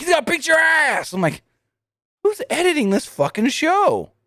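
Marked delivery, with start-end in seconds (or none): 0.0-1.1 loud, high-pitched hollering outburst. Retelling a brawl on a show, retelling a yell. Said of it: "And then Don just yells".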